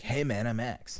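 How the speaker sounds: lively, energetic, loud, high-energy buddy delivery. Imitating the other speaker's high-energy alternate self: imitating Max. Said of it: "That's a really good impression".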